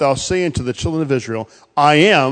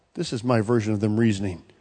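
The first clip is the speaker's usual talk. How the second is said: usual speaking voice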